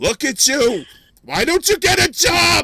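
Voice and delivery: put-on very high, loud, drawn-out old grandmother voice.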